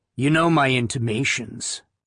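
ordinary delivery

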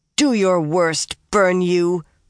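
snarled, words forced out. Reading a novel, Nynaeve, doubled up, answers the other speaker, snarling. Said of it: "Nynaeve snarled".

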